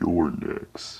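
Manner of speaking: demon-like, angry delivery. Quoting a line someone said, in a demonic voice. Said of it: "am I really gonna have to make a voice? ... in a demonic voice".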